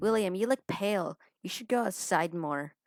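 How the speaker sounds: put-on annoying girl voice. Voicing the drunk character Evelyn, in a put-on annoying girl voice. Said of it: "I have to do this girl voice again".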